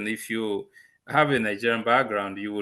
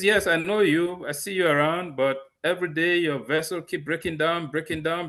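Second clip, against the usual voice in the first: English in a put-on, pitched-up Italian accent; 6 semitones higher than usual. Retelling what a transport manager said: imitating an Italian accent. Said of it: "with the Italian accent".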